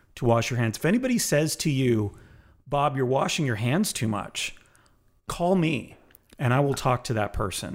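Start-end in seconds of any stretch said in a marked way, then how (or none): none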